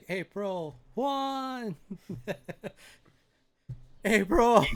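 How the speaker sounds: calling out loudly. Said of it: "That's almost like Marco Polo".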